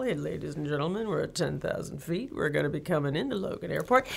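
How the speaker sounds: low, soft southern drawl, announcer-like. Explaining why airline pilots all talk alike, imitating one, airline pilot southern drawl. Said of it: "talk in that kind of southern drawl".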